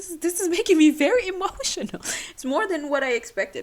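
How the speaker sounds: very high, teary emotional speech. Speaker unexpectedly breaks down while recounting a memory of him, crying, emotional. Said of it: "why am I crying?".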